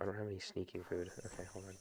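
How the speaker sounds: very quiet, hushed half-whisper under the breath. Playing a game while talking to listeners: half-whispering. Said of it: "I don't know why I'm whispering".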